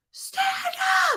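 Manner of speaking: very high, all-out screaming, forceful. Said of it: "scream like you're at a concert".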